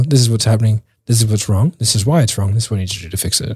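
plain

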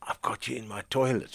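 put-on hushed, conspiratorial whisper. Retelling what some people say to the speaker: imitating a conspiratorial whisper. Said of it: "sort of conspiratorially".

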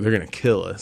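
ordinary talk

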